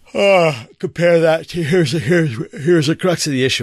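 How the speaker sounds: talking through a yawn. Reading an article aloud very late at night, speaker talks while yawning. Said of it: "I'm sorry, I'm yawning".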